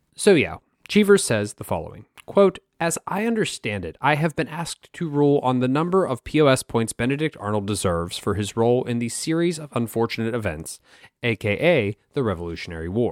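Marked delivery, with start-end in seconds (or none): none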